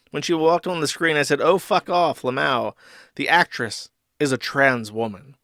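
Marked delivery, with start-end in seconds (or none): none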